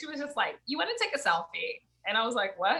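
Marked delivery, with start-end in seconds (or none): 0.7-1.8 small, high, creaky little voice. Imitating how a woman asked him something: little voice. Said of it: "she said it like in her little voice".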